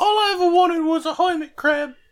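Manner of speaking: badly done, very high, loud put-on woman's voice. Telling others what Betty said about her birthday, do a really bad Betty impression. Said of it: "You're doing a really bad impression of Betty".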